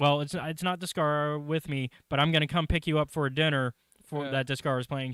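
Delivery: ordinary delivery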